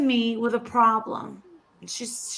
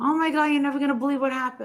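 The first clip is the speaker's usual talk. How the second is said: rushed, hysterical sobbing and crying; 2 semitones higher than usual. Retelling a client's phone call about her son's death: imitating hysterical crying. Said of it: "hysterical crying".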